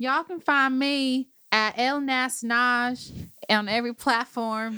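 slow, put-on Southern drawl. Telling listeners where to find them online: put-on Southern accent. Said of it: "Is this your Southern accent?".

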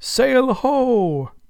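very high, exultant, triumphant cry with ho stretched out. A lookout on the main masthead calls down a triumphant cry. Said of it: "cried a triumphant voice".

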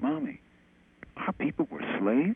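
put-on stunned disbelief, high and swooping. Retelling a child's question to his mother: imitating disbelief. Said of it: "this, like, unbelief, you know, in his voice".

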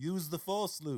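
very slow, careful, deliberate delivery. Repeating the impression when asked: Alec Guinness impression. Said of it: "give it to me again".

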